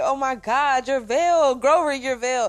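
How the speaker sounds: put-on, acted screaming. Retelling own reaction while watching an episode: retelling own screaming. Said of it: "the whole time I'm screaming".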